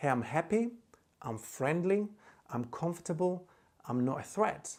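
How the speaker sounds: normal talking voice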